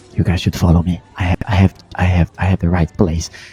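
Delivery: voice dropped very low, confiding and hushed. Retelling what a man said after looking around: retelling him lowering his voice. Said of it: "he lowers the voice".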